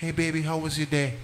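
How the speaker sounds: sweet, nice, soft, gentle feminine voice. Acting out a wife greeting her husband home: soft feminine voice. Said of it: "they want soft, nice, feminine".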